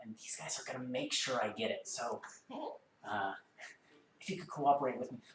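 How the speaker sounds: hushed, half-whispered tone. Voicing a character who points to the figures next to him: whispering in character. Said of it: "he says in sort of a whisper tone".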